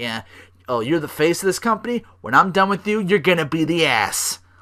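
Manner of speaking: sassy trash-talk tone. Imitating a wrestler's promo against a rival: sassy Roman Reigns voice. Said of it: "that much sass".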